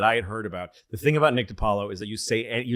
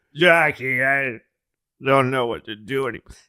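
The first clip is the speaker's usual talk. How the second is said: put-on drunk man voice, higher and louder; 3 semitones higher, 5 dB louder than usual. Retelling a taped late-night call to Jackie, imitating drunk LBJ.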